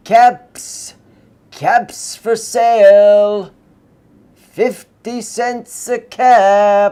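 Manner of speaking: very loud, very slow street-vendor calling cry. Narrator reads a cap seller's call as he walks along: calling out wares.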